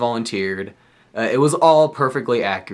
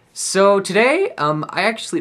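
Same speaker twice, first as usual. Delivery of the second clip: voice breaking mid-phrase, very high; 9 semitones higher than usual. A channel host introduces today's video to viewers, voice cracking. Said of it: "did you hear that voice crack?".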